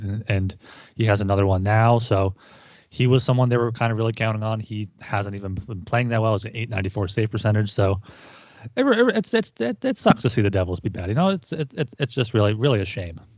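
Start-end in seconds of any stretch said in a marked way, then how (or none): 7.7-13.1 insincere, sarcastic, swooping sing-song delivery. Talking about a losing hockey team, sarcastic. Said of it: "Is that sarcasm?".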